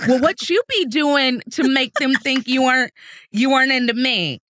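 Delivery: put-on switches into a distinctive American dialect accent.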